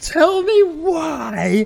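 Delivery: put-on yelling, drawn out on why. Retelling how the other speaker's rant started, imitating someone yelling. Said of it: "the mic, like, almost peaked and go".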